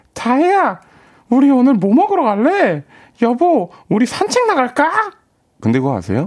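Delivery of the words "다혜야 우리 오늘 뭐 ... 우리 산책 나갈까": very high shop-counter customer-service tone. Retelling talking to family: imitating own high-pitched voice. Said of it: "그 목소리로 말을 하죠".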